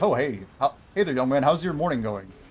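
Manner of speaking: put-on cool CEO voice. Acting out a chance elevator meeting, speaking as a cool CEO. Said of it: "the cool C E O that I happen to bump into".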